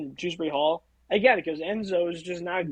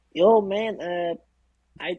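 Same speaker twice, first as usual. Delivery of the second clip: put-on Mexican American accent, put on; 4 dB louder than usual. Pretending to be a named man in an improvised bit, as Enzo Fernandez with Mexican American accent. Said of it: "immediately proceeds to do a Mexican American accent".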